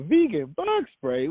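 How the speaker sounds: very high, shocked, incredulous outburst.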